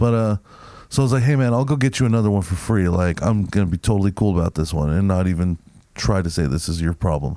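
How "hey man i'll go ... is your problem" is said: ordinary talk, nothing marked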